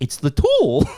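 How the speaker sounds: very high, matter-of-fact delivery. Retelling a movie scene where John answers Cecil: imitating John's line. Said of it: "And John just goes".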